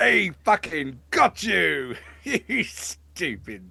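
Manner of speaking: gloating jeer through laughter. The game master voices a creature mocking someone who tripped, laughing while taunting. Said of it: "the Uskog is just laughing at this point".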